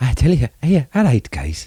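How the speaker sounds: soft, failed attempt at a northeast English accent. Trying to speak as Steve Bruce and giving up, in a failed Steve Bruce impression. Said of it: "I can't do the accent".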